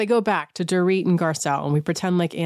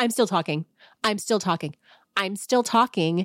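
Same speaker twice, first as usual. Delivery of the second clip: bossy, mean voice, cutting in and talking over; 3 semitones higher than usual. Retelling how someone kept cutting another off: imitating Anne's mean manager tone. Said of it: "like that. It's just that mean teacher, mean manager".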